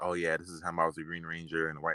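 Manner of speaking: ordinary talk, nothing marked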